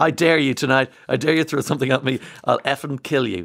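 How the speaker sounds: joking, laughing put-on voice. Retelling what a performer on stage told the crowd: retelling a laughing threat. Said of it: "she's laughing the whole way through".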